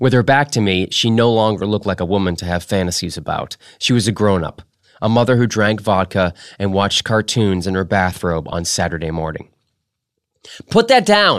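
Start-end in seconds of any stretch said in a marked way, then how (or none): 10.7-11.4 curt, sharp, snapped delivery, very high. A mother, her back to the narrator, turns on someone: snapped. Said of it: "she snapped".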